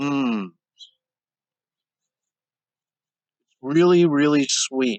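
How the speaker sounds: speaking with mouth full, chewing. Eating during a mindful eating exercise, talking while chewing. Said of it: "Notice how slow I'm chewing".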